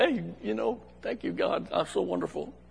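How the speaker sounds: soft, smug, self-satisfied voice.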